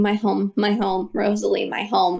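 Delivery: soft, repetitive muttering. Narrating the scene, the speaker voices a man walking toward home: muttering to himself. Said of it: "you just see him muttering".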